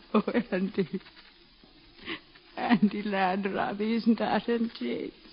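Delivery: tearful. A mother answers her son's question, crying. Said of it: "You're crying, Ma".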